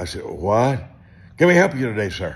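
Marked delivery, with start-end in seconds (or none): 1.4-2.4 rapid-fire, rushed, raised, high-pitched delivery. Retelling a fast food drive-thru order, fast-talking drive-thru worker. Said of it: "how fast they talk at a fast food place".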